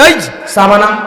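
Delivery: loud, forceful, domineering, bossy voice.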